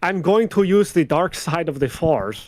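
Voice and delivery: slow, clumsy, bad fake French accent. Joking about French actors voicing a Star Wars game: bad French accent. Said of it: "French actors trying to be like".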